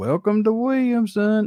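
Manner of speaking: thickest Southern drawl, pitched very high. Imitating a man's voice heard with a car in the background, in the thickest redneckish southern drawl. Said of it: "the thickest redneckish Southern drawl ever".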